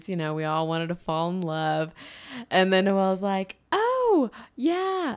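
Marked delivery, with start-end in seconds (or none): 3.7-5.2 very high-pitched put-on voice. Retelling a chat about semester dreams, as Noelle: high-pitched Noelle impression. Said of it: "such a high pitch voice for Noelle".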